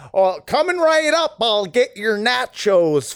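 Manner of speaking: put-on American accent. Retelling a waiter's line at a themed restaurant, in a fake American accent. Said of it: "My favorite fake American accent".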